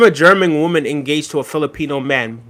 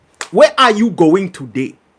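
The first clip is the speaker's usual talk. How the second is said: smooth, rolling, put-on Nigerian accent; 3 semitones higher, 3 dB louder than usual. Showing an accent after saying they could do one: Nigerian accent. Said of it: "I could do a Nigerian accent for sure".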